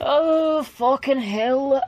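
put-on faint Irish accent. Reacting to the top of the round, in a slightly Irish accent. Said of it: "Apparently gone slightly Irish".

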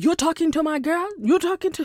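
high, horrible, bad, fake Jamaican accent. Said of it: "this is a horrible Jamaican accent".

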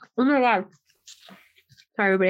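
talking with mouth full of food. Apologizing to listeners mid-chat, talking with mouth full. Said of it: "I have a bun in my mouth".

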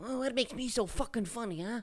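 very high, squeaky, put-on gangster voice. Quizzing a partner, doing a Joe Pesci impression. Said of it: "That's Joe Pesci".

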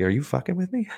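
waitress voice pitched very high. Retelling how the server reacted to a customer's order; acting out a server's reaction. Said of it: "She's like".

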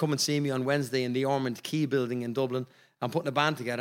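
plain

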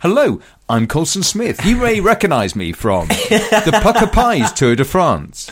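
plain

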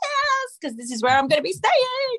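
very high, rising, overjoyed delight, acted out. Describing a film scene where she arrives at the house, acting out overjoyed delight. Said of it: "because she's so happy".

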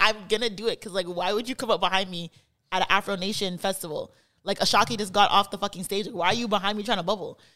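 ordinary delivery

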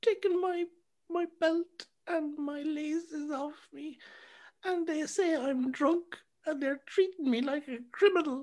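play-acted very high, tearful crying voice. Retelling a friend's call from the police station after drink driving, imitating him crying. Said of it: "he's on the phone crying".

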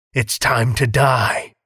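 deep, raspy, hoarse voice. Reading a younger brother's threat to his sibling aloud: deep, raspy voice. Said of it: "he said in a deep, raspy voice".

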